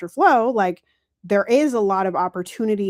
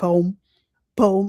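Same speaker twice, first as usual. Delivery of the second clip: Midwestern accent and pronunciation. Contrasting with how the listener says the word, speaker says it Midwestern accent. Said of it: "I say it like a Midwesterner".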